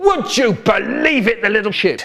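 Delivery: small, mild, high-pitched roar. Retelling a dad's outburst during a fight with a stranger, retelling a roar. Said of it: "he's roaring".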